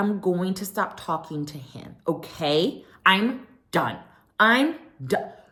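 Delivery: put-on patronizing, condescending tone, as to a small child. Retelling a reality show fight, imitating someone talking down as to a child. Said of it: "repeats herself as if she's talking to a five-year-old".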